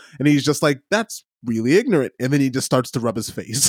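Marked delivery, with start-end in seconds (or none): 0.9-2.1 mock deadpan, straight-laced newsman voice. Describing a newsman's reaction to something he dislikes, deadpan Anderson Cooper impression. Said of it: "one of the best deadpan responses of all time".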